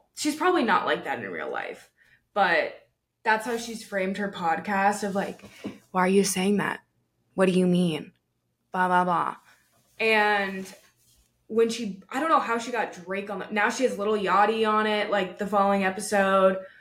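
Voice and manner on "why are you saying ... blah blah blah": mock bored, uninterested girl voice, flat and unengaged. Imitating how the woman frames her podcast: imitating a bored, uninterested girl. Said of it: "boring, like, un-, uninterested girl".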